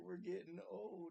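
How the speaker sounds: very high, loud wail. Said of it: "he's like".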